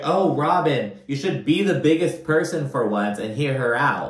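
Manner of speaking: normal talking voice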